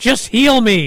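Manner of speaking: play-acted, loud, high-pitched screaming yell. Recounting how she yelled at them, retelling a yell. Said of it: "She was yelling at us".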